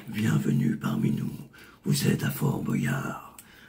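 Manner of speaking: big, very deep, rough voice. Voice actor demonstrating his Fort Boyard role, Maître du temps big deep voice. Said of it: "avec une grosse voix grave".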